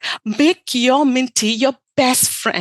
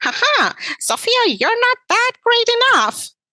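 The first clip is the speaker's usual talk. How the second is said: squeaky, very high, bouncy voice; 10 semitones higher than usual. Showing how to strip the power from Minty's words by repeating them in a Mickey Mouse voice. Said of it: "mimicking Mickey Mouse's voice".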